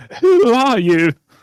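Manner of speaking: very high, shrill, frightened cry. Role-playing a rescue after a distress signal: imitating scared people. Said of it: "That's my uh, impression of scared people".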